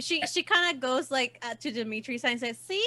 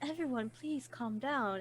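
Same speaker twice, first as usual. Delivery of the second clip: charming soothing voice, quieter; 7 dB quieter than usual. Voicing Lilith going out to settle a crowd: charming Lilith. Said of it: "she'll try to charm the crowd".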